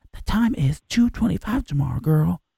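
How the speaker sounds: put-on whisper. Mimicking Alexa answering a question, whispering Alexa voice. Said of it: "And she'll whisper".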